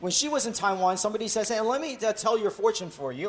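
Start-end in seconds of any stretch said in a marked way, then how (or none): none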